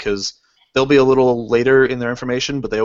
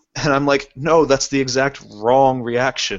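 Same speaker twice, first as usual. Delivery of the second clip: ordinary talk, nothing marked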